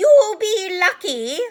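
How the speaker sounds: shrill, very high, very loud cackle. Narrator reads Peeves the poltergeist answering Dumbledore, in a cackling voice. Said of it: "said a cackling voice".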